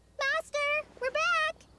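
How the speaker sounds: loud, very high call-out shout. Arriving back and calling out to the master: shouting. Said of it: "You don't have to shout".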